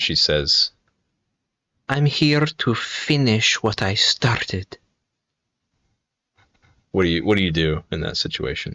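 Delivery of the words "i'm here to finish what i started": put-on small, slow little voice with Finnish accent. Narrating a scene in an alleyway, a voice behind you speaks: Melly's tiny Finnish-accented voice. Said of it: "a little tiny voice uh, behind you in a Finnish accent".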